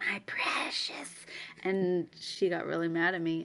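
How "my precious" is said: hushed, breathy whisper in a creature voice. Retelling a video sent to annoy a sister: Smeagol voice. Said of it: "trying to impersonate Smeagol".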